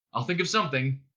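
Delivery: plain reading voice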